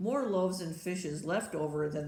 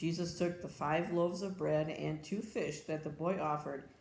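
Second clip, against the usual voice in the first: plain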